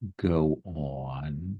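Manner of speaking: threatening, scratchy, rumbling voice, drawn out. In a scene about a family member, a character speaks in a rumbling voice. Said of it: "That voice kind of does that rumble".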